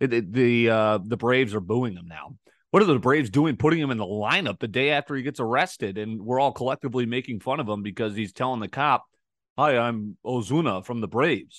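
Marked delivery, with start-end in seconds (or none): 9.6-11.6 bad put-on voice, slow and drawn out. Imitating a player introducing himself to a cop: terrible Marcell Ozuna impression. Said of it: "That was a terrible impression by me".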